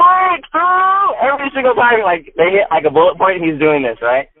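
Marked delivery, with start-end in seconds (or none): 0.0-1.2 very high, loud, ringing high-pitched shout. Retelling how someone in a quiet audience suddenly yelled: imitating someone shouting loudly. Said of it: "you just hear him being like".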